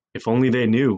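plain reading voice

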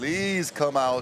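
slow, drawn-out pleading.

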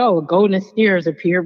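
ordinary delivery

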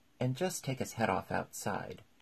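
plain

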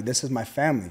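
put-on emphatic, firm, insistent tone. Retelling a man's reply to an officer, acting out his emphatic insistence.

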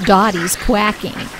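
plain

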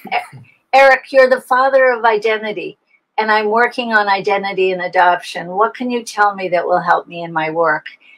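ordinary talk

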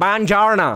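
put-on Italian mangled in heavy American accent. Recalling a film scene where he spoke Italian, in Brad Pitt's heavy American accent. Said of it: "To je jak Brad Pitt v Hanebných panchařech. ... Když mluvil italsky".

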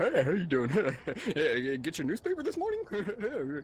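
swooping, sing-song voice. Acting out a cult member's greeting while walking: imitating cult people greeting. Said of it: "Is that what the cult people sound like?".

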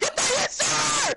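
high, excited shouting.

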